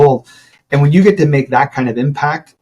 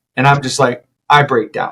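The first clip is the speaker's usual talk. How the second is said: ordinary delivery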